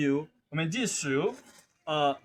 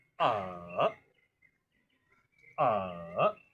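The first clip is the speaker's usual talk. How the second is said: third tone on a, dipping down then back up; 11 semitones lower, 4 dB quieter than usual. Demonstrating how to read a vowel in the third tone. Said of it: "using the third tone".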